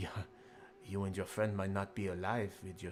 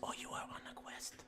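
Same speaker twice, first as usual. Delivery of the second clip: breathy, intimate, soft whisper, very close. Voicing Sofia as she leans in to the listener, whispering close to ear. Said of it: "leans into you and whispers really close to your ear".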